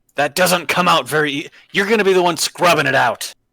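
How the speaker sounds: furious, high-pitched, angry, scolding bellow. Voicing Valkyr, who is upset about a mess on his boat: Valkyr yelling angrily. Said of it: "he yells".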